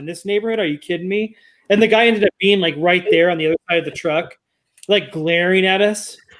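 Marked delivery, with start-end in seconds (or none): 0.0-1.4 muttered quietly under breath. Retelling a remark made on a walk past a sign: retelling a mutter under breath. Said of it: "looked under my breath".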